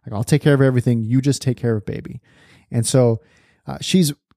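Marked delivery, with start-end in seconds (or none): none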